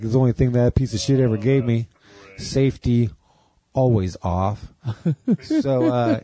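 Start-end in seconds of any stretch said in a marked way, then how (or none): none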